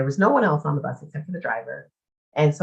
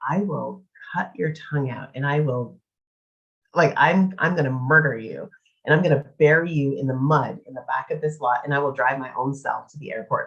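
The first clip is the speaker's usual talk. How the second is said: normal talking voice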